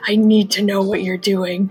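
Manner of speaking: hushed whisper in a character voice. Leaning across the table to speak privately to Elena: whispering in character. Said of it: "try to, like, whisper".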